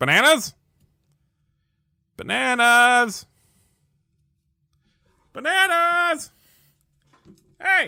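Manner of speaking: very high, very loud, shrill, frantic yelling. Playing a dad in a game, calling out for someone: yelling bananas frantically. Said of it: "you hear your dad yelling out the word bananas".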